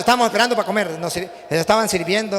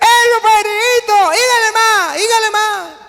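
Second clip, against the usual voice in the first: put-on very high, drawn-out, tipsy drunken holler; 12 semitones higher, 5 dB louder than usual. Telling a joke, the speaker imitates a drunk at the door shouting to the priest. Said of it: "el borrachito que estaba en la puerta gritaba".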